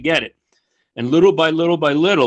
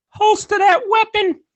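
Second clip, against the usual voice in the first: very high-pitched voice. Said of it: "he's got a high-pitched voice".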